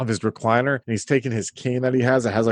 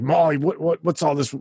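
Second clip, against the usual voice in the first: cold, distant voice, pitched up; 5 semitones higher than usual. Voicing the player's father who questions the mother: voicing the cold father. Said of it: "and he's like".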